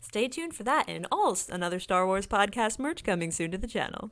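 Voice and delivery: commercial read in ad announcer voice. Plugging upcoming podcast merch, in a commercial voice. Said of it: "I had to do my commercial voice there".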